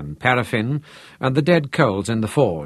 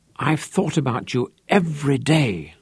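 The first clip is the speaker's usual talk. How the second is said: whispering, much higher pitch; 3 semitones higher than usual. She brings her tears under control, then speaks to him, whispering. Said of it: "she whispered".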